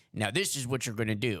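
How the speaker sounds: put-on gruff elderly man impression. Discussing a Breaking Bad henchman, speaker mimics Mike: gruff old man voice. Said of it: "He's got the gruff old man voice".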